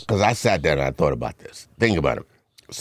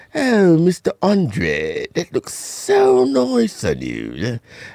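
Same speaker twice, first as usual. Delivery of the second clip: fake British accent, high, sing-song, very drawn out; 13 semitones higher, 3 dB louder than usual. Remembering his school principal complimenting him: Miss Pittman's fake British accent. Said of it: "talk with a, a British accent".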